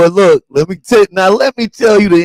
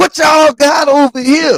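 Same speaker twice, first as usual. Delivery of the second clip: mock shrill, high, angry scolding scream; 9 semitones higher than usual. Retelling how a boy screamed a question at them: imitating a kid screaming. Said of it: "He screamed".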